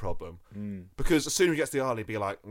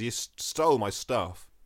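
usual speaking voice

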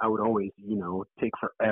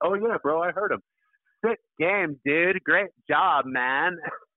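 put-on high, drawn-out Orange County skater-kid bro accent; 9 semitones higher, 4 dB louder than usual.

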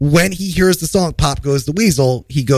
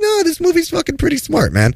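insistent tone, very high-pitched. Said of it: "And I was like".

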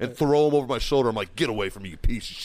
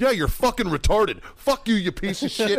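all-out, high, furious screaming; 8 semitones higher than usual. Retelling screaming at a crying kid: imitating someone screaming. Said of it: "I've never screamed so fucking much".

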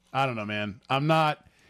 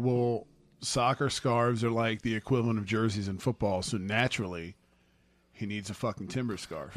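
ordinary delivery

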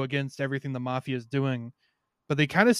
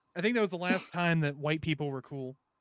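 ordinary talk

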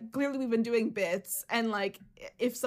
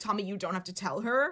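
dead-serious, grave, weighty delivery; 2 semitones lower than usual. Retelling what Curtis said to Tommy: imitating a very serious tone. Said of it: "in a very serious way".

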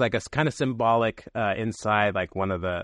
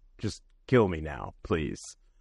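put-on pleading voice, pitched much lower; 6 semitones lower than usual. Describing a character's scene, the speaker acts out his plea, mock-begging as Baltar. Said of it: "He walks to Gaeta and begs".

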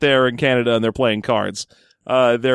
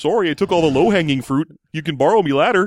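bad cheesy put-on Canadian accent; 4 semitones higher than usual. Joking about Canadian poker players, bad stereotypical Canadian accent. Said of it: "doing shitty Canadian stereotypes".

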